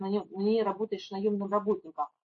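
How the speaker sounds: ordinary delivery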